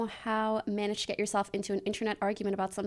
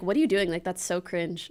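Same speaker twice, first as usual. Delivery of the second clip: put-on judgmental tone, lower pitch; 3 semitones lower than usual. Retelling scolding a guy for bullying someone, in a mock-judgmental tone. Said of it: "In the most judgmental tone you've ever heard".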